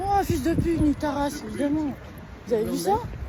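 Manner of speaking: loud, high-pitched, furious yelling.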